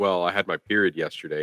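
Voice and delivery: plain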